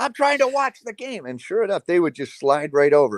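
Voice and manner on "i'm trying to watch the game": higher-pitched angry yelling. Remembering a ref standing in front of Coach Knight: imitating Coach Knight yelling at a ref. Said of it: "or just yell at 'em".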